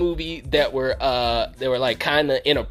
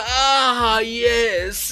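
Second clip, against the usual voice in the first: over-the-top, theatrical mob boss voice, drawn-out ah; 8 semitones higher than usual. Retelling a movie scene where a mob boss rises from the floor: imitating a flamboyant over-the-top villain. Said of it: "Why are you so fucking flamboyant?".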